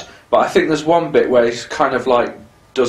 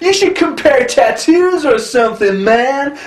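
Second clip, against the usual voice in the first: very high put-on nineties California dude voice; 13 semitones higher than usual. Imitating the film's bad guy lines: imitating a nineties California dude. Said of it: "That's the way that he talks".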